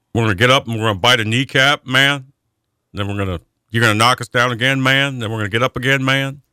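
"man" voiced and stressed at each line's end. Imitating Dan Campbell after naming him for coach of the year: Dan Campbell impression. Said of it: "Does he say "man" a lot there".

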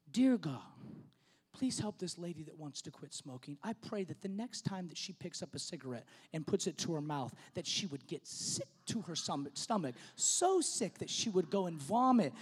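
still, small, hushed half-whisper. Retelling a mother's prayer for a lady quitting smoking: imitating a half-whispered prayer. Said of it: "In that still small voice, she whispers this prayer".

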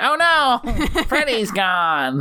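very slow, high cartoon nerd voice. Speaker complains about how the ghost heads were voiced, doing a Simpsons nerd voice. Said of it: "Simpsons nerd voices".

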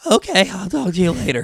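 voice failing and giving out mid-speech. Retelling a phone call with a sister while losing voice: imitating own lost voice. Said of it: "my voice goes from this to".

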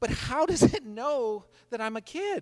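put-on very loud, very high, baffled, fed-up kid voice. Retelling a girl struggling with a childproof cap, imitating an astounded, frustrated kid. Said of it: "in this astounded and frustrated voice".

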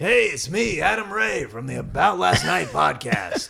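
raspy, gravelly voice, pitched a touch high. Doing an impression of a guest for him: Adam Ray impression. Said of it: "Do you wanna hear my Adam Ray?".

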